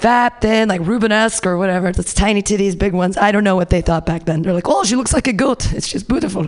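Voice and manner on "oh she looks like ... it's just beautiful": terrible, clumsy, put-on Israeli accent. Voicing what people back then thought of a woman, in a terrible Israeli accent. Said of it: "That was a terrible accent".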